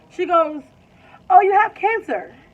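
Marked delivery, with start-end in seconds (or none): 1.3-2.2 mock breezily casual, very high and very loud. Retelling how a nurse broke serious news: imitating a nonchalant tone. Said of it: "so nonchalant".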